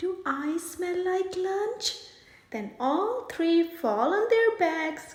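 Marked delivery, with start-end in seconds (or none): 0.0-2.0 sweet as sugarcane, honeyed, syrupy voice. Reading a story aloud, a skunk teasing an alligator: sugarcane voice. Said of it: "asks in a sugarcane voice".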